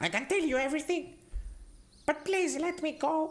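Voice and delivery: pleading, begging goblin voice. Voicing a surrendering goblin begging to be released: pleading goblin prisoner. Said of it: "in goblin, he says".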